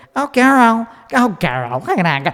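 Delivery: high-pitched speaking voice.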